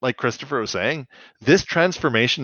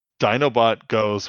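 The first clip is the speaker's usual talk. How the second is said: ordinary talk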